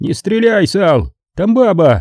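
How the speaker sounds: all-out bawled shout, high and shrill. A narrator reads a man calling to an armed man bursting into the office, yelling. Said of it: "Чарли заорал".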